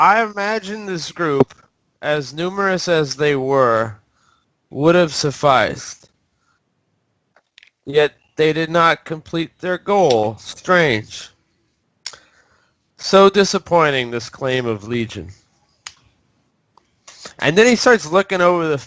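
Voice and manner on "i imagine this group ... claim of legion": cool, calm, unbothered, composed villain voice. Voicing Strahd speaking across the battlefield: calm in character. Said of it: "he's pretty calm".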